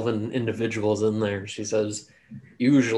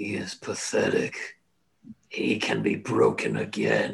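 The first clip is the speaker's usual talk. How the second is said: scornful, mocking, very drawn-out slow drawl; 9 semitones lower than usual. Voicing a voice heard in a character's head: mocking, derisive tone. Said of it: "in a mocking, derisive tone".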